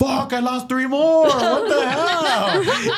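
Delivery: slow, stunned, near-tearful, teary voice. Retelling a friend losing followers: imitating a friend near tears. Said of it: "kind of wanted to cry with, like, emotion".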